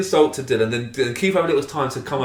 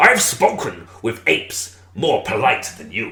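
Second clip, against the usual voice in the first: deep put-on pirate voice, laid on; 5 semitones lower than usual. Trading insults in a game, in a pirate voice. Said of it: "I can only do the pirate voice".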